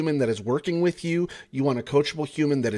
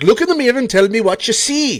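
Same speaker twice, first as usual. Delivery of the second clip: very loud, high, really bad Jamaican accent; 9 semitones higher, 10 dB louder than usual. A coach quoting the Cool Runnings bathroom scene to the people they coach, in a bad Jamaican accent. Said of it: "my really bad Jamaican accent".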